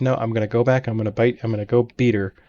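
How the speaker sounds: plain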